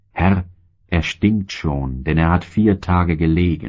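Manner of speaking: plain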